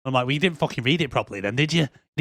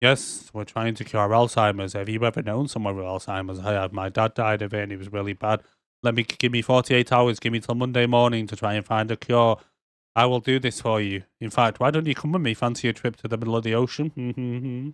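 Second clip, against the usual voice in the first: mock deadpan monotone, lower; 3 semitones lower than usual. Describing a woman who is deadpan the whole time, imitating her deadpan delivery. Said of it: "she's literally just deadpan the whole time".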